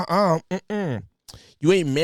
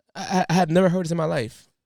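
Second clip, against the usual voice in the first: ordinary delivery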